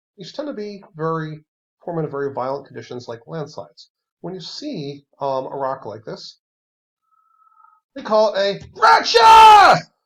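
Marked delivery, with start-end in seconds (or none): 8.0-9.8 very high, very loud angry yell. Speaker names a rock type while explaining it, angry voice. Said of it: "why do I say it in that angry voice".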